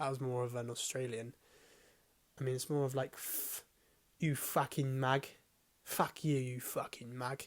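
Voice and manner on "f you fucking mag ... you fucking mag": clumsy, bad put-on Cockney accent, very slow. Trying again at an accent after botching it, failed Cockney accent attempt. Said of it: "Why can't I do a Cockney?".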